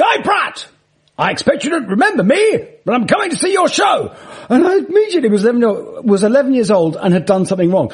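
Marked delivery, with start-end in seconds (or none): 0.0-4.1 huge, big booming voice, very high pitched. Retell how your old English teacher suddenly called out to you, in Mr. Shepherd's big booming voice. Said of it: "this big booming voice goes".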